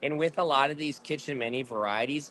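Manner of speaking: plain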